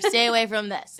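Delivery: ordinary talk, nothing marked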